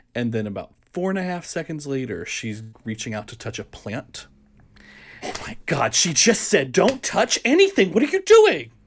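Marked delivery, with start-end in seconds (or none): 5.2-8.5 scolding in full voice, very high and very loud. Retelling an audience member talking to the screen: imitating someone at full voice. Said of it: "full voice".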